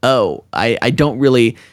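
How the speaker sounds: plain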